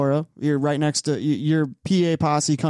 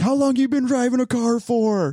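put-on yelling, pitched higher; 9 semitones higher than usual. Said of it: "yelling at each other under yellow".

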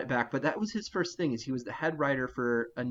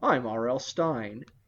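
put-on very slow, very drawn-out voice with a light Manhattan accent; 3 dB louder than usual. Describing how the author talks, imitating R L Stine: Manhattan accent. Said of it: "a little bit of that Manhattan accent where he's like".

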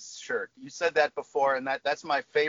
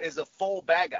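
playful, put-on English accent; 2 semitones higher than usual. Speaker shares a favorite phrase to say, in an english accent. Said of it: "my favorite one to say with an English accent".

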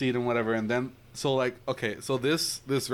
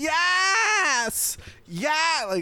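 mock girl's scream, much higher and louder; 4 dB louder than usual. Telling a story about a tourist girl screaming at a man; imitating a girl screaming. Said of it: "like starts like screaming like".

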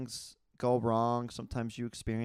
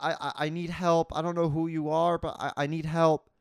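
imitated girlish sobbing, higher pitch, much slower; 6 semitones higher, 6 dB louder than usual. Retelling a phone call where a girl pleaded for help, imitating her sobbing. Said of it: "And she kept sobbing and saying".

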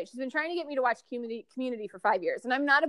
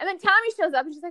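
plain

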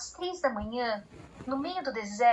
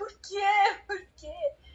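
put-on high, tearful shout through heavy sobs; 8 semitones higher than usual. Recounting crying copiously that night, she re-enacts her past self: retelling her own shout. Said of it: "E eu gritava".

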